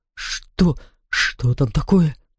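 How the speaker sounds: unsteady, quivering, quavering, trembling voice. Reading a character's question aloud from a story, in a trembling voice. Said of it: "спросил господин Вурм дрожащим голосом".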